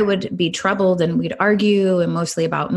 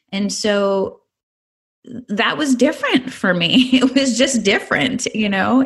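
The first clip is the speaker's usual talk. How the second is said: ordinary delivery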